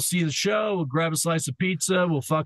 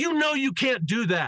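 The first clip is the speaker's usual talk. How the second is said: put-on scream, higher pitched; 6 semitones higher than usual. Retelling how the bus driver told off a passenger: imitating someone screaming. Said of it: "the driver screamed out".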